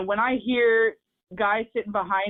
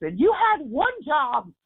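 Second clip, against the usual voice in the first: put-on, high, raised yell; 7 semitones higher than usual. Describing yelling at John Carlson during the power play: retelling own yell. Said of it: "where I yell to John Carlson".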